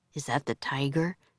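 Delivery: ordinary delivery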